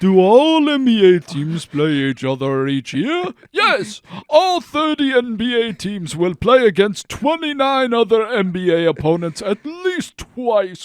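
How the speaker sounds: loud, scary, spooky ghost-story voice. Asked by the other speaker to read the text aloud in a scary Halloween voice. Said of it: "Read it in a scary Halloween voice".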